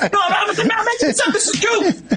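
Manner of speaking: shouting while laughing.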